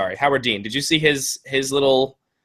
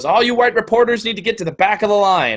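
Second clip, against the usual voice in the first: put-on, high-pitched, commanding, bossy yell; 8 semitones higher, 3 dB louder than usual. Quoting a protester on a bullhorn at reporters, retelling her yell. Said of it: "she's yelling at the reporters".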